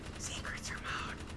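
mock secretive whisper, soft, slow and close.

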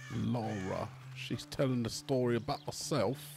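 best attempt at a put-on British accent. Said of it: "That's my best British accent".

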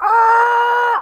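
high-pitched, loud, weird scream. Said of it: "like, a weird scream over it".

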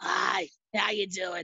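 mock hoarse, ill-sounding voice. Retelling how a sick friend sounded: imitating Brandon sounding like Harvey Fierstein. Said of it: "He sounded like Harvey Fierstein".

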